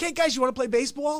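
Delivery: put-on Jersey way of talking. Retelling asking new classmates to play baseball: imitating own past New Jersey accent. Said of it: "especially with a Jersey accent".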